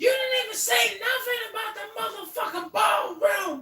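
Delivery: put-on, imitated screaming. Retelling how she screamed at some woman: imitating someone screaming. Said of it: "She was screaming at some woman about".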